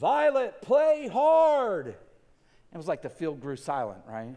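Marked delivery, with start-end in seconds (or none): 0.0-1.9 big, loud, fatherly voice, hard and drawn out. A dad calls to his daughter Violet from the sideline, big loud dad voice. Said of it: "in my big dad loud voice".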